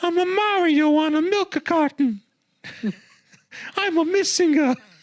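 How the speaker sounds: very high, squeaky, goofy, mocking cartoon voice. Joking about a bad Mario game, mocking the hero: Mario voice. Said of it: "Just making fun of Mario".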